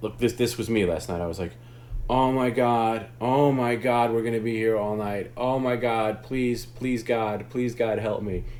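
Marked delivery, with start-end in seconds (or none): 2.1-8.4 slow, whiny, desperate, begging voice. The speaker acts out their own pleading from last night: retelling own whiny pleading. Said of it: "stop whining like a little bitch".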